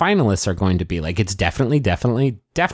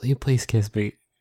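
put-on whisper; 4 dB quieter than usual. Retelling a line from the episode: imitating a whisper. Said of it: "she whispers it".

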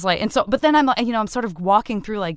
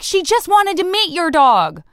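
high, raised mock yelling; 8 semitones higher, 5 dB louder than usual. Retelling what the other dog's owner yelled as they walked away: imitating someone yelling. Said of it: "she's yelling at me".

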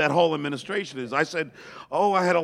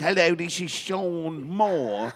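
clumsy, bad, put-on fake English accent; 2 semitones higher than usual. Phoning as a senator's assistant, in a bad english accent. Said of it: "I had this bad English accent".

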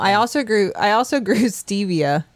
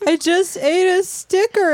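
put-on tearful voice of crying child, higher pitched; 12 semitones higher than usual. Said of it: "she's talking to me and crying".

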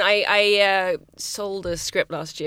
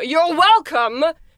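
harsh, brutal, very high-pitched and loud; 9 semitones higher, 7 dB louder than usual. Showing how to answer someone who didn't say thank you: said brutally. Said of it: "if you just brutally go".

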